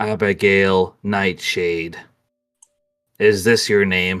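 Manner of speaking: very flat, toneless monotone drone. Game master voices a voice from a box as a player puts her hand in: very monotone voice. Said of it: "a very monotone voice".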